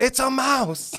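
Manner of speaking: play-acted, shrill, very high, full-lung alarmed shout. Retelling a restaurant mouse sighting: imitating Ton yelling at top of lungs. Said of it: "yells out at the top of his lungs".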